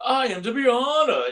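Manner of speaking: shrill, drawn-out, slow and loud hammy villain voice. Recapping a cartoon episode, the speaker quotes Evil-Lyn in an overdone evil voice. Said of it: "she was trying so hard to like, aren't I evil?".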